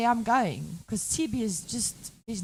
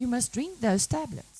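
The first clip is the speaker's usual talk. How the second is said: ordinary talk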